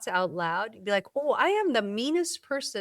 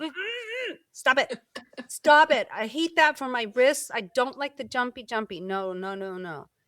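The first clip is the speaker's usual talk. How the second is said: put-on irritated, mock-annoyed complaining tone; 3 semitones higher than usual. Voicing her body protesting burpees, in a mock-annoyed protest. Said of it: "get really mad at you".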